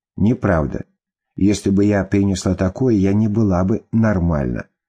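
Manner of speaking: ordinary delivery, nothing marked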